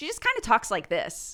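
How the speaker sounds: gravelly rabbit voice. Speaker showing how the rabbit character talks: higher, slightly gravelly rabbit voice. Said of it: "a bit higher register and uh, like a like slightly more gravelly".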